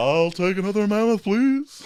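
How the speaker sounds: very high put-on cartoon bear voice. Voicing the bear Barrick after being asked for a bear voice: put-on bear voice. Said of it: "That works. That's pretty good".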